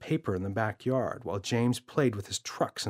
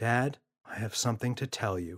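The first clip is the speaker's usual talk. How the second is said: quite calm and composed. Narrator reads James speaking to his father, quite calmly. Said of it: "quite calmly".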